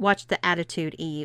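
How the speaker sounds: usual speaking voice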